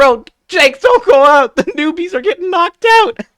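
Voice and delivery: loud, very high yelling. Retelling how the rest of the crew yells at him: imitating a crew yelling. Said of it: "the rest of the crew is yelling at him".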